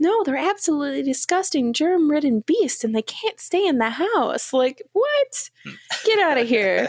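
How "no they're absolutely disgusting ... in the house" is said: sweet, fairy-like voice. Retelling a scene, the speaker voices the boy's mom in a sweet Tinkerbell voice. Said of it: "in like a sweet, like Tinkerbell kind of voice".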